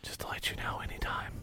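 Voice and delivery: put-on whisper. Retelling what was whispered in his ear after a throw: retelling a whisper. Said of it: "I whispered in his ear".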